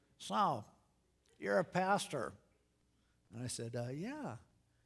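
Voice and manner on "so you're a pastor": put-on old computer speech-synthesizer voice, higher. Retelling a little guy coming up to the pastor, in an old computer speech synthesizer voice. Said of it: "He talked like one of those old computer speech synthesizers".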